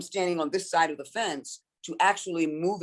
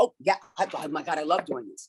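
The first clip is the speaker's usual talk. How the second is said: mock-gushing, geeky, nerdy, excited enthusiasm. Recalling sitting across the table from agents, retelling geeky gushing. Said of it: "I get geeky and I'm like".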